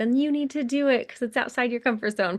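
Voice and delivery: play-acted, high-pitched, loud yell. Imagining someone over there pushing them to try it: imitating Aaron yelling. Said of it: "I see Aaron over there yelling at me".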